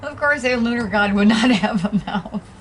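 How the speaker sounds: very loud, giggling all the way through. Reading about Norse gods, the speaker can't stop laughing while speaking. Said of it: "I'm still laughing over".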